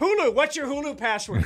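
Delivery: put-on yelling. Retelling how Jordan, getting married, demanded the Stars game: imitating Jordan yelling. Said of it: "she's yelling at people".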